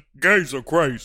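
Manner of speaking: ordinary guy voice. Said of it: "That's our straight man impression".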